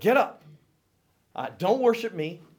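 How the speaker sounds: very high, loud, reproachful voice.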